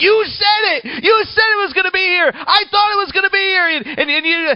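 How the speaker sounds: put-on very high-pitched, loud, childish tantrum. Retelling coming home from school to no bike: imitating own childhood hissy fit. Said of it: "And I threw a hissy fit".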